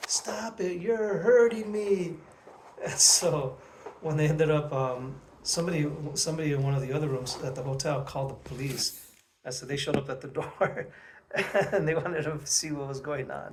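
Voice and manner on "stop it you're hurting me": put-on high-pitched, screaming, pleading child voice. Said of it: "your sister kept screaming and yelling".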